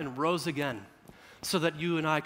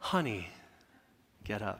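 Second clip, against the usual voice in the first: put-on soft, gentle, tender, loving tone; 7 semitones lower, 8 dB quieter than usual. Showing how a parent might gently wake a child: warm, tender wake-up call. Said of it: "I wish that's what I sounded like".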